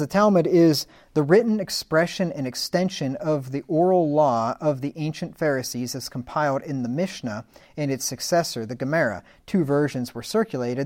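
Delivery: ordinary delivery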